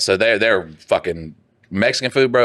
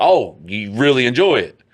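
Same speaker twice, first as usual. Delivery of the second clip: put-on happy tone, higher; 4 semitones higher than usual. Retelling praising a son for eating: imitating own happy voice. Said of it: "get real happy".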